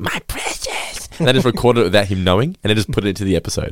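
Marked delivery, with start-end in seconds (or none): 0.0-1.1 whispered, airy, breathy put-on voice. Imagining an actor asked to do his impression: Gollum voice. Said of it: "can you do your Gollum impression?".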